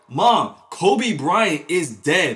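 loud, very slow, drawn-out yelling. Retelling telling mom the news again: retelling own past yelling. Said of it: "you can hear me, like, literally yelling".

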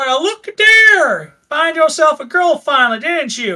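high, put-on orc character voice. Voicing an orc greeting strangers in the swamp: orc voice. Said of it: "he kinda elbow nudges the frog person".

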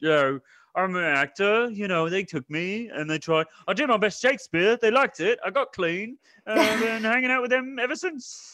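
put-on very high, loud, goofy, belted-out Liverpool accent. Recapping a film where Ben Kingsley appears, doing his Liverpool accent. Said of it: "He's Liverpool accent".

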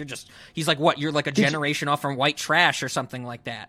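plain

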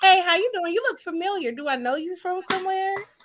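polite ladylike tone. Showing how to greet a man: imitating own very ladylike approach. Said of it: "I always will be very ladylike".

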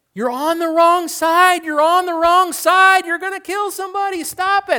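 very high, loud, alarmed yelling. Retelling a movie scene where people warn drivers: imitating people yelling. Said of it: "there are people yelling at them".

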